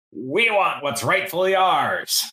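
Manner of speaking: raging, high, swooping, drawn-out furious bellow. Voicing a scowling creature rising from the river: shouting in rage. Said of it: "glistening with water and rage".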